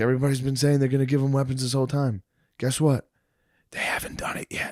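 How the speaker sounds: hushed whisper under the breath throughout. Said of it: "why are you going yin yang twins?".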